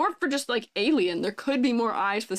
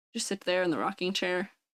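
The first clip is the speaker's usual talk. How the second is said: ordinary talk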